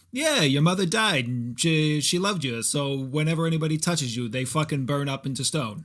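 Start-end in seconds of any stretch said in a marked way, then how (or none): 0.1-2.6 mock-dismissive brush-off, slower. Speaker mocks how a movie character explains things, imitating a dismissive speaker. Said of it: "he's just like".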